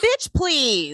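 unimpressed, scoffing aside. Retelling a cast member's confessional: Rinna impression. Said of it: "that was a great Rinna impression".

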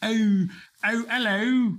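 bad put-on British accent. Right after admitting it's not great, doing a bad british accent. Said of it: "I don't do a really great British accent".

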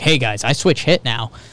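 ordinary talk, nothing marked

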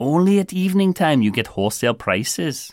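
put-on Indian accent. Despite vowing not to, you slip into an attempted Indian accent. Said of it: "fight the urge to attempt an Indian accent".

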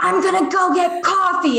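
high, drawn-out whisper-shout, right up close. Retelling how Alexa comes over early on retreats: imitating Alexa's whisper shout. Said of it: "she'll always come over to me and whisper shout".

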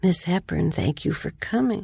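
small, little, sweet-toned voice. Telling how Michael opened the door to a visitor, in Michael's little sweet voice. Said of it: "he talked in this little sweet kind of voice".

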